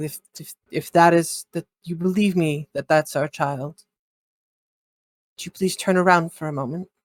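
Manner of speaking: speaking quietly, whispering. Voicing a character asking someone to turn around: speaking quietly, whispering. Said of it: "kinda whispering things".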